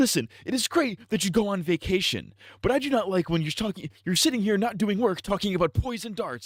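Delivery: very high, chastising, scolding teacher voice. Retelling how the teacher chastised him for talking: imitating a teacher chastising. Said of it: "chastising me as I'm getting up".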